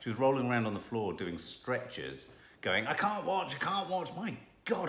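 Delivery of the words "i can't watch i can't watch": put-on high-pitched voice in English accent. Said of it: "her accent's brilliant".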